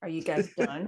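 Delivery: mock dry, flat, expressionless deadpan delivery. Retelling looking into the camera during a long take, retelling a deadpan line. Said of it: "I just like literally deadpan into the camera and be like".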